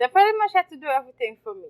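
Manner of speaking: fast, sarcastic, boastful delivery.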